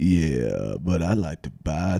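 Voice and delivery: acted low voice. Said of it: "just a guy with a real low voice".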